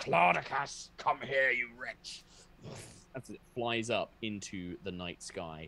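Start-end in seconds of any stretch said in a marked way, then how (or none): 0.0-2.2 loud, booming creature bellow, roaring. A narrator voices a creature flying off into the night sky, bellowing. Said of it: "you can hear it just bellowing like".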